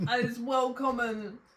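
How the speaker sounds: mock slang delivery. Slipping unexpectedly into an Ali G voice mid-conversation. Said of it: "I've turned into Ali G".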